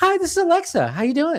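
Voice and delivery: very high, lively, swooping, human-sounding voice. Retelling how the upgraded speaker greeted: human-sounding Alexa voice. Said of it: "to a real person".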